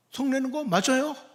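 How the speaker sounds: high, stubborn, defiant tone. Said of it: "아주 버티면서".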